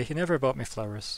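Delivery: normal talking voice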